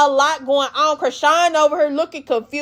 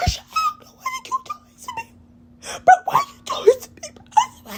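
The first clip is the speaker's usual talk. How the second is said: mock hoarse voice, very high and scratchy. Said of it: "[name] and [name] face yelling and shit with a hoarse-ass voice".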